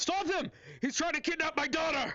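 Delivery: very high, shrill yelling. Narrating a scene, voicing a man who yells out as the elf man runs. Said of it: "you hear again the man yell out".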